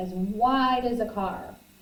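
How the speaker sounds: plain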